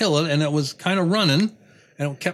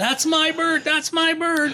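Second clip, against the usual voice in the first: mock, very high-pitched hollered yell; 12 semitones higher than usual. Telling a story about a pheasant, acting out the other guy, imitating a guy yelling. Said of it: "that guy's yelling".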